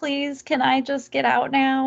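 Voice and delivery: put-on faint, crying plea. Retelling a film scene where a hurt passenger begs the driver: imitating Pam weakly pleading, crying. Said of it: "she's weakly asking him to let her go".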